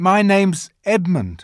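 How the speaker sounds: uncomfortable, ill at ease. Edmund gives his name to the lady looking hard at him: awkward. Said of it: "said Edmund rather awkwardly".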